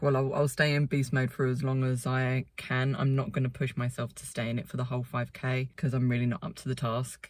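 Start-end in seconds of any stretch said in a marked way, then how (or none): none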